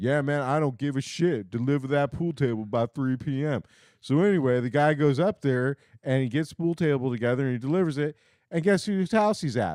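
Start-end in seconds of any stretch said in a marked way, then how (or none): 0.0-3.6 put-on jive-talking voice. Speaker retells a customer on the phone ordering a pool table delivery: imitating jive talk.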